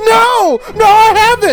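loud angry rant.

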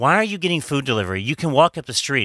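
ordinary delivery

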